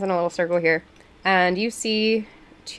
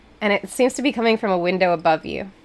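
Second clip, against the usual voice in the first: ordinary talk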